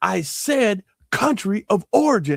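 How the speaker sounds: play-acted high, angry, barking shout. Recounting a man questioning his buddy, retelling an angry yell. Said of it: "the way he yelled at him".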